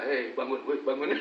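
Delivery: plain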